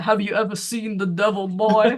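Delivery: gruff, macho, manly storyteller narration. Recall the voice used for episode one of the Toadmen, in [name]'s manly, gruff storyteller voice. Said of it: "manly, gruff, uh, you know, storyteller voice".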